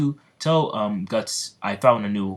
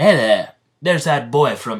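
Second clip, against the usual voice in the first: put-on country accent, said loudly; 4 semitones higher, 5 dB louder than usual. Voicing a character greeting a boy from long ago: Speedwagon accent. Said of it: "where's my, uh, Speedwagon accent?".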